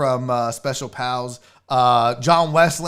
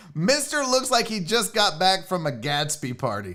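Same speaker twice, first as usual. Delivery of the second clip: plain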